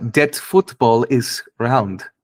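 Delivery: English spoken in a put-on German accent. Asked to do German accents too, the speaker tries one: German accent. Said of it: "this is the German accent".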